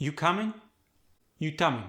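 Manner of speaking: flat intonation, no rise. Teaching how questions are pitched, saying one as a question with no rising tone. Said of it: "No rising tone".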